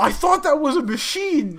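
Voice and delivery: shrill, very loud, high-pitched outburst. Retelling a story, the speaker quotes someone's remark after a woman blew her nose: retelling a loud blurt. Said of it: "very loudly goes".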